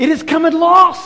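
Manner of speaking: high, loud, slow, heavenly ringing shout. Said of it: "a loud voice shouting across the heavens".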